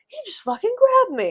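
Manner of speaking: very high, very loud, shrill, furious shout. Retelling confronting a patient who grabbed her in the ER: retelling her own furious yell. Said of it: "I'm, like, yelling".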